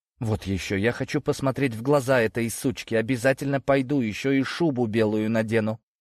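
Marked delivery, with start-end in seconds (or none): none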